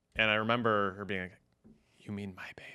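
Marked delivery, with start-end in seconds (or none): 2.0-2.7 put-on whisper, quieter. Retelling the wife's question at the hospital: imitating a whisper.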